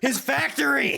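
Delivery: very high, creaky, rough monster shout. Retelling what the big boss yells: character yelling. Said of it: "He just yells".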